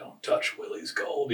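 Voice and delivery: soft, rasping voice. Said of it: "with a raspy voice 'cause he's got the asthma inhaler".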